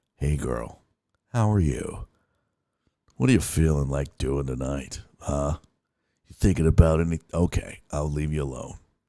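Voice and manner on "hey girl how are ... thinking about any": sexy, seductive voice, lower and quieter. Turning to talk to someone present, sexy voice. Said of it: "I feel sexy doing that".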